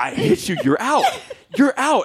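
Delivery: mock-angry, insistent, exasperated yelling. Retelling a game, the speaker acts out yelling at a sixth-grade boy who keeps throwing. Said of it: "Then I'm yelling at your sixth grade son".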